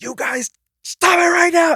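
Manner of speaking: play-acted very high, shrill, loud scream. A parent retells screaming at their young kids during bath time; retelling own loud screaming. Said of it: "I started screaming really loud".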